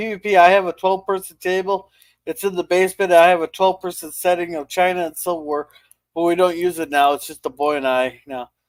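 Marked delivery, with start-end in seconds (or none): none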